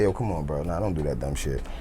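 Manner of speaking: low, soft, calm, soothing-down voice.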